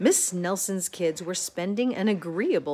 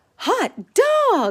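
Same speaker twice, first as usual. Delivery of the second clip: very high, loud, exclaiming cry; 14 semitones higher, 8 dB louder than usual. Narrator reads the class's line after the principal leaves: crying out. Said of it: "cried the class".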